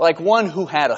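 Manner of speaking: ordinary delivery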